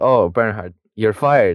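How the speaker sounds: ordinary delivery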